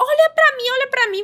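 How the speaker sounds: insistent, high, eager shout. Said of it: "o menino começou a gritar".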